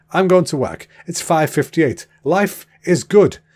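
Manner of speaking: put-on Swedish accent. Pretending to narrate his drive to work, in a pretend swedish accent. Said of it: "So I'm speaking a Swedish accent right now".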